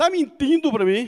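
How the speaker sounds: put-on northeastern Brazilian accent. Retelling the father questioning whether the child bathed, northeastern Brazilian accent. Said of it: "com aquele sotaque nordestino".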